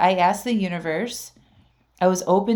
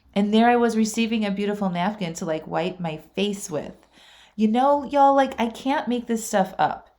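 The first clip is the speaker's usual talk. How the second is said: ordinary talk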